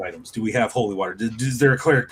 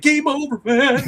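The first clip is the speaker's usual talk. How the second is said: panicked, very high-pitched voice; 5 dB louder than usual. Retelling how a player acted during a tabletop game: imitating panicked Bill Paxton character.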